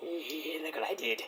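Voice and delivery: very quiet, wicked, murmured tone. Retelling how Edge stares down his rival, imitating Edge with a wicked grin. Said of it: "with a wicked grin".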